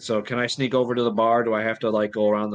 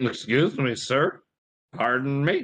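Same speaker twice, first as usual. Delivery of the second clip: slurred, mumbled, words smeared together; 3 semitones higher than usual. A player voicing a character who bumps into a thug, slurring words. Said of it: "I'm slurring".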